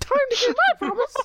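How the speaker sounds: very high, squeaky cartoon-mouse helium voice. A player voicing their hasted character, in a squeaky helium voice. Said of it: "That's like a Mickey Mouse voice or like a helium voice".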